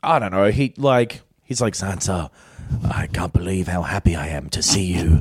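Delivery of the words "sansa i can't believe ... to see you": small, low, weaselly little voice. Retelling a TV scene where Littlefinger greets Sansa: Littlefinger's little weasel voice. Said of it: "His little weasel voice".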